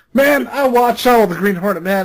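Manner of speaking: heavy, exaggerated, laid-on Southern accent. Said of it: "this super Southern accent".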